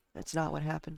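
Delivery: plain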